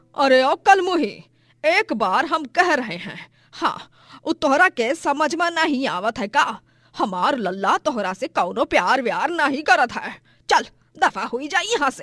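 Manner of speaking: loud, shrill, furious, angry scolding. Voicing the mother-in-law throwing the bride out, angry mother-in-law voice. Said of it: "गुस्से से बोलती है".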